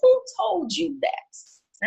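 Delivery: slow, high voice, like royalty. Answering a woman who says she has to be strong: King Jaffe voice. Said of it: "in my best King Jaffa voice".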